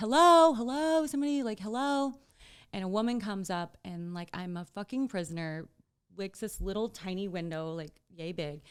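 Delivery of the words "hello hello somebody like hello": shrill, raised, loud, high screaming. Retelling waking up strapped down alone, imitating own past screaming. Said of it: "And I'm screaming and I'm like".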